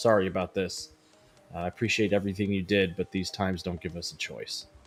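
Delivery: hushed, almost half-whispered, private voice. Voicing a character speaking to himself near the players: almost half-whispering to himself. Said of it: "almost whisper to himself".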